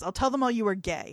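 ordinary talk, nothing marked

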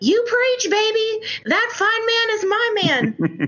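play-acted, very high-pitched, slow, drawn-out yelling. Retelling how a woman at a conference yelled at the speaker: imitating someone yelling.

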